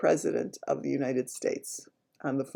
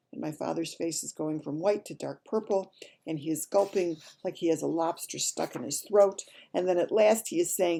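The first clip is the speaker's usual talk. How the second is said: plain reading voice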